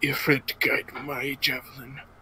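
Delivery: soft, hushed mutter to oneself under the breath. A player voices their character's words while throwing a javelin, muttered under breath. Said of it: "under my breath".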